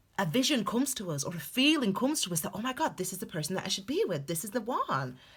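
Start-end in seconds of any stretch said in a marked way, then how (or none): 2.5-5.2 fake, laid-on American accent with swooping pitch. Acting out a sudden feeling about a person: put-on American accent. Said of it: "sorry about the American accent there".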